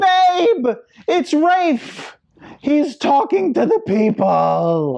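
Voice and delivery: put-on very high, drawn-out shout. Retelling the reaction on seeing an announcement on the phone: retelling own shout. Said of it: "I shouted".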